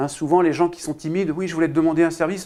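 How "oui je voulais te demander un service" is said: very fast and rushed, words tumbling together. Showing how timid people ask for a favour, very fast. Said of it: "ça va très très vite".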